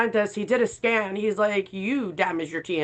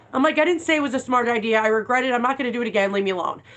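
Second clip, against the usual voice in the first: normal talking voice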